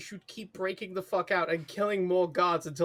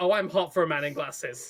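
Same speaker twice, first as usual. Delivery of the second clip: ordinary delivery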